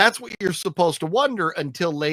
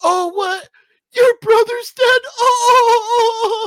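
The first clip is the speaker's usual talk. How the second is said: mock terrible fake crying, higher, louder, slower; 8 dB louder than usual. Mocking a movie boyfriend hearing that her brother is dead: imitating terrible fake crying. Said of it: "The worst fucking fake crying".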